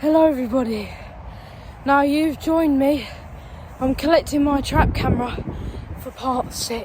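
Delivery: out of breath. Greeting viewers after running through rain to a trap camera, out of breath. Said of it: "I am out of breath".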